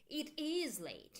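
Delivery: emphatic is, rest plain. Lesson on emphasis with the to be verb, stress on 'is'. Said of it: "here we make the emphasis with our intonation with to be verb".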